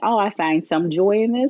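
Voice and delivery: ordinary delivery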